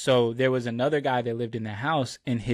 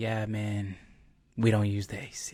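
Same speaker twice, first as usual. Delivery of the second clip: put-on pained voice, quieter; 2 semitones lower, 4 dB quieter than usual. Retelling a housemate's answer about the AC: imitating Chip's pained voice. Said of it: "pain in his voice".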